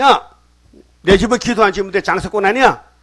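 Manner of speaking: high, loud, furious scolding tone.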